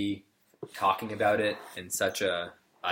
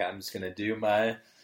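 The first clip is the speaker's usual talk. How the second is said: put-on drawling actor's voice. Retelling what was said at the Oscars: imitating Matthew McConaughey. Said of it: "He did that at the Oscars".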